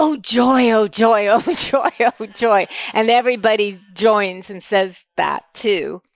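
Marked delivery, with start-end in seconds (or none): 0.0-2.7 put-on voice of a blissed-out, dreamy man.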